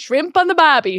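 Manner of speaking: bad, put-on Australian accent. Answering a request for an Australian accent: put-on Australian accent.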